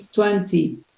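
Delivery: London pronunciation of twenty. Showing a teacher how Londoners say a number: London pronunciation of twenty. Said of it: "and the London is".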